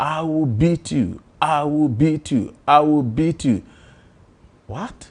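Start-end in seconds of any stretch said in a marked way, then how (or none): 0.0-3.6 mock, light, high, held-back shout. Retelling how a spouse shouted from another room: imitating wife shouting. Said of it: "my wife was shouting".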